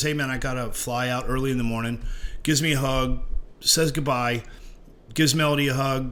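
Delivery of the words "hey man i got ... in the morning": ordinary delivery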